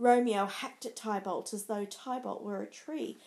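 ordinary delivery

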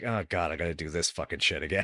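weary, fed-up, very low grumble. Imitating David's fed-up attitude while discussing a scene: imitating David sounding fed up. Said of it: "you can hear even in David's voice, he's like".

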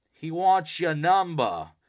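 very loud, high, put-on Boston accent. Retelling an awkward phone-number moment, quoting the other person in a Boston accent. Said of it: "In a Boston accent".

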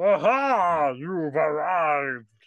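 loud put-on frog voice, drawn-out "aha". Retelling what a flying frog said to them, in a frog voice. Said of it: "I forgot about your frog voice".

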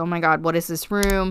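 ordinary delivery

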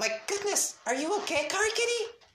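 badly faked, very high female voice. Voice the disciple asking car kitty a question, in a terrible put-on female voice. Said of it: "here's my disciple voice".

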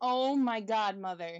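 normal talking voice

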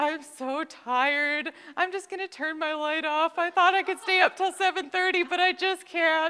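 very high, loud, tearful sobbing, acted. Retelling what a child said while crying late at night: imitating Caden crying. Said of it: "and he's crying".

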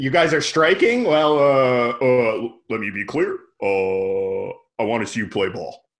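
put-on voice, each uh long and drawn out. Acting out a call telling strikers to just play basketball: Obama impression. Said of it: "Obama did tell him to just play basketball".

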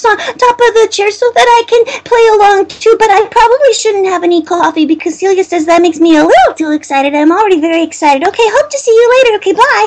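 very high little alter-ego voice. Demonstrating the little voice people then started leaving messages for, little voice. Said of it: "had this blast with this little voice".

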